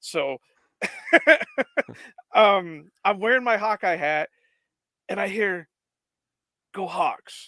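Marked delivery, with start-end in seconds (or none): 6.7-7.5 dead-serious, intense coach voice. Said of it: "in this really intense voice".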